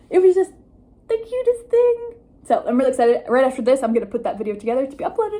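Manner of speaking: super-fast, rapid, excited chatter. Giving viewers updates on a video shoot, talking super fast. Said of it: "I know I'm talking super, super fast".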